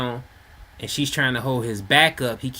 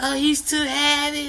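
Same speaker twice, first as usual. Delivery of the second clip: acted-out scream, much higher, slower; 13 semitones higher than usual. Telling how a woman tried to hold up a slumped man, imitating a woman screaming. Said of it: "she's screaming like".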